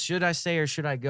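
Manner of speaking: normal talking voice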